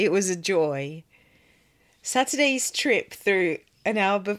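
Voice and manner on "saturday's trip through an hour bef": giggling, words broken by laughter. Reading a letter aloud and breaking up at a word: laughing while talking. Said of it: "I'm still laughing at the word".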